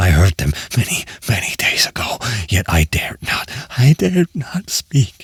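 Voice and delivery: low, gibbering, stammering murmur. Narrator reads a man murmuring as if unaware of the listener, low, hurried, gibbering murmur. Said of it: "But the measured rocking movement of [name] was undisturbed. I rushed to the chair in which he sat. His eyes were bent fixedly before him, / and I saw that he spoke in a low, hurried, and gibbering mu".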